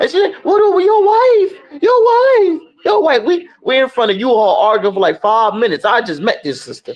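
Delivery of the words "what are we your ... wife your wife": unhinged, repeated outburst in a very high voice. Retelling an Uber driver arguing outside U-Haul: imitating someone losing it. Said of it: "she started losing her mind".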